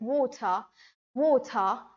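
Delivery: unhurried British pronunciation, water drawn out. Speaker contrasting British and American ways of saying a word: slow British pronunciation. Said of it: "the British guy will take his whole time to pronounce the word".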